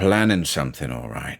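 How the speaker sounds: ordinary delivery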